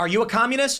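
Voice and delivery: play-acted, yelled, challenging tone. Acting out a stranger in the woods shouting back: acting out a yell. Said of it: "he yells back".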